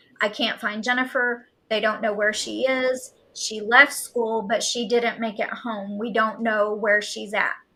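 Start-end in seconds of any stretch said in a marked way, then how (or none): none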